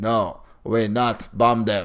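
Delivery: blank, mechanical, flat robotic monotone. Mocking how a character delivers her line, imitating robotic line delivery. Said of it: "standing there robotically with this blank expression".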